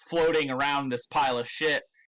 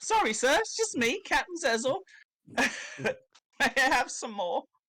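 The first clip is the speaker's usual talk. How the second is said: put-on very high child's voice; 12 semitones higher than usual. Speaking to Captain Zezel in character; kid voice. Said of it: "in my kid voice".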